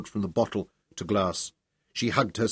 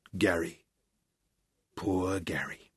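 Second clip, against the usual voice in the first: very soft, barely audible murmur; 3 semitones lower, 7 dB quieter than usual. [name], just told he won a recount, speaks so only Ruth hears, very softly. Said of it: "so softly, that only Ruth heard him".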